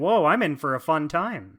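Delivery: ordinary talk, nothing marked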